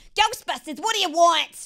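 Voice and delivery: put-on loud, high-pressure New York accent. Showing an impression of a high pressure New Yorker. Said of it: "impression of, like, a, of, like, a New Yorker".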